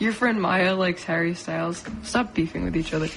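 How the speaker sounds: ordinary delivery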